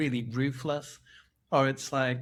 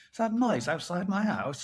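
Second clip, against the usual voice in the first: put-on annoyed middle-aged man voice, raised pitch; 5 semitones higher than usual. Teasing the other speaker for acting old, mock middle-aged man voice. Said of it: "you've literally turned into this middle-aged man".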